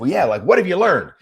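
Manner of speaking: acted-out heated, pissed-off delivery, high and loud. Retelling own reply to someone criticizing the new bike: retelling own angry reply. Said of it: "getting pissed".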